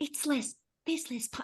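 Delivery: secretive, breathy, hushed whisper under the breath. Retelling a friend's reaction while others present up front: imitating someone whispering. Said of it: "whispering 'cause the girls are up the front".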